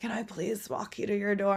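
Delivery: put-on slurred, drunk-sounding speech. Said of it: "He was literally slurring".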